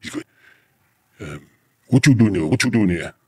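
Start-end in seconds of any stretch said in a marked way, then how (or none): 1.9-3.1 put-on Kenyan English accent. Retelling what a man said after they got out of the car, in a Kenyan English accent. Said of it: "forgive my Kenyan English accents".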